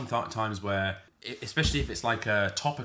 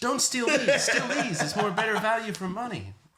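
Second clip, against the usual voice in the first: high-pitched, put-on American accent; 12 semitones higher, 3 dB louder than usual. Joking about a scene in the new film: Peter Parker voice. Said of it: "That's a really good Peter Parker".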